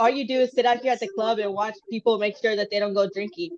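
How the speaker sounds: ordinary delivery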